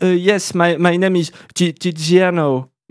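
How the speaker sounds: fake, put-on English accent. Recalling an attempt to introduce oneself in a strange way: put-on English accent. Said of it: "j'ai essayé de le dire avec une espèce d'accent anglais".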